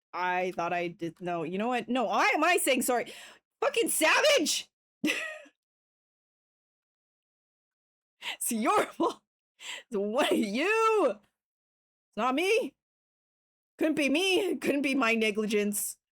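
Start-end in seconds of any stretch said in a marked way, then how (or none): 3.6-14.5 high, swooping yell. Talking to the group after a mistake: yelling. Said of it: "I'll stop yelling".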